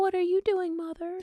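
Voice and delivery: eerily calm, spooky voice pitched very high. Describing a terrifying movie character, speaker imitates his high spooky voice. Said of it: "It's very high. It's very spooky".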